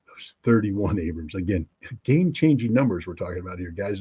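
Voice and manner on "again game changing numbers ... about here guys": mocking, sarcastic, dropped-down delivery. Speaker addressing his audience as guys, sarcastic. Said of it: "I'll be as sarcastic as possible".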